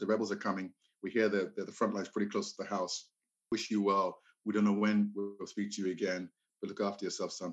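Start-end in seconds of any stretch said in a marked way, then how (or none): none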